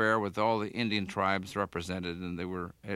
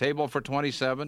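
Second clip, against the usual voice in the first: acted, loud, raised, high-pitched yell; 7 semitones higher, 3 dB louder than usual. Speaker retells the group arriving at the Rose Room, retelling a loud yell. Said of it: "I yelled it in a loud voice".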